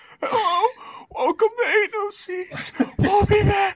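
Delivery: very high, barely-there, voiceless lost voice. Acting out how you sounded in a podcast clip, imitating having no voice. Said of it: "And he had zero voice".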